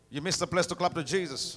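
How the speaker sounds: normal talking voice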